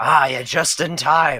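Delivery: very loud, drawn-out sarcastic tone. Voicing a character greeting the guards who just arrived: sarcastic in character.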